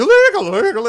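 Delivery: mock loud exclamation. Describing patrons reacting to the word illegal, imitating people saying it loudly. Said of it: "They're very loud".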